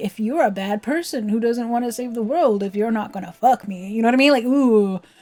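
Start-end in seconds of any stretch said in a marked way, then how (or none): 0.0-3.9 sinister pressuring tone. Imitating Seymour pressuring Yuna, with a creepy Seymour impression. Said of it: "being like".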